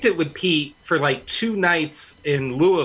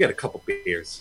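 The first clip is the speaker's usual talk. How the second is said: muttering under breath, lower in pitch and quieter; 4 semitones lower, 6 dB quieter than usual. Retelling what John said at the bar, imitating John muttering under his breath. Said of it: "under his breath".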